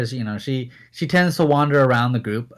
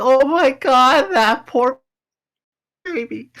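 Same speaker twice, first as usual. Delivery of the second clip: very high, slow, weepy tearful crying voice; 12 semitones higher, 5 dB louder than usual. Voicing a character who puts her hands to her cheeks: crying. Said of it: "she's like, crying".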